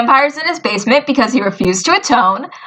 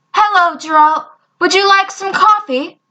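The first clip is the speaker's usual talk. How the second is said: higher-pitched, polite character voice; 6 semitones higher than usual. Narrating a story, voicing Irina greeting Geralt at the inn, Irina voice. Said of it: "[name] goes downstairs for breakfast and finds [name] waiting for him".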